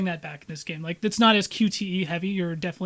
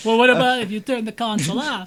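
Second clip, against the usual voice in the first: rough, loosely done, bad Persian accent; 3 semitones higher, 4 dB louder than usual. Talking with friends about loopholes in a game, the speaker is imitating Ben, Persian accent. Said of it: "Where does Persian accent come from".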